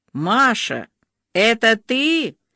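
glad, joyful, cried-out exclamation. A caller phoning the heroine: joyfully cried out. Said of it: "радостно вскрикнул голос".

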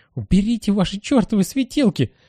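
irritated shout, very high-pitched. Narrator reads a character's outburst at people holding flashlights, irritable shout. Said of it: "раздраженно кричит он".

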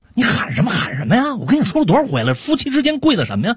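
high, wide, defensive voice.

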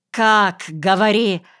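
demanding, impatient shout. Reading the narrator pressing the other speaker for how to catch the thief: impatient shout. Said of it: "нетерпеливо крикнул я".

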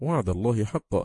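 ordinary delivery

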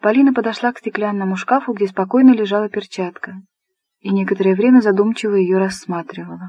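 ordinary delivery

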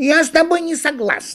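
angry, very high and loud voice. Narrator voicing the monkey answering the turtle, angry. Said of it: "рассердилась обезьяна".

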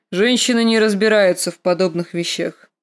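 ordinary delivery

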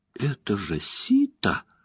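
abrupt, sudden swooping squeaky outburst. Reading a story aloud, she suddenly squeaks out who someone is; squeaking. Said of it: "Она вдруг пискнула".

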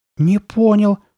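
sudden, very high, shrill, loud outcry. Steve reacts after Carly Beth snarls her demand at the boys; crying out. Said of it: "вскрикнул Стив".

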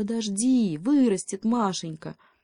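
ordinary delivery

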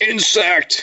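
acted, very high-pitched, fed-up, annoyed yell. Retelling how Thanos grabs Spider-Man in the film: imitating Thanos shouting. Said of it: "just shouts".

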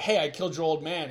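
usual speaking voice

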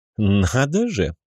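mocking, derisive tone. A necromancer reacts as another guest joins the tea party, mocking. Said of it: "произнес некромант насмешливо".

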